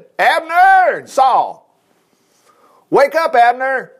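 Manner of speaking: very slow, high, loud, drawn-out shout. From a slope opposite the camp, a man shouts to the sleepers; shouting. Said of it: "David shouted".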